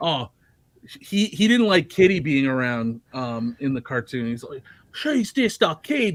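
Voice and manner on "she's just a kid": very high, slow, poor put-on Australian accent. Retelling what a cartoon character said, in a bad Australian accent. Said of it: "I don't do a good Australian accent".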